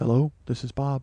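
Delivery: soft, meek, timid, mock-scared voice. Recounting a phone call, the speaker imitates the man who answered: imitating Bob's timid, scared voice. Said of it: "he is so timid and scared just from the jump".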